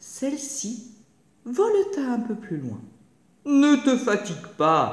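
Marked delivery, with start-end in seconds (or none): 3.4-4.9 slow, loud, sneering and sniggering. The fox taunts the dove that keeps fluttering out of his reach, sniggering.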